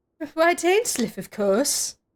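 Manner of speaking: put-on posh accent. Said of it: "Why does he sound so posh?".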